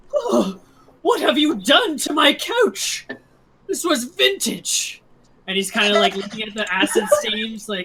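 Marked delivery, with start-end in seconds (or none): 0.1-5.0 very high, shrill, shrieking complaining voice. Voicing the brothel owner as guards arrive on the scene; shrieking brothel owner. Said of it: "the owner of the brothel kind of shrieks".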